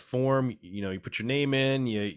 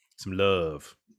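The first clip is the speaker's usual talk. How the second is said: off-putting, cringey, gross delivery; 4 semitones lower than usual. Asking listeners for positive reviews, said in a gross-sounding delivery. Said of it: "it's bad when I say it like that".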